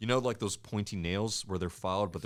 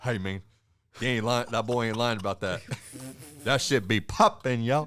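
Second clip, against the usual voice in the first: put-on Louisiana country accent, louder; 3 semitones higher, 5 dB louder than usual. Quoting a country dude who was telling him something, in a Louisiana accent. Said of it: "Sounds like a Louisiana accent".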